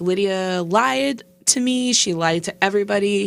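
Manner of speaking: ordinary talk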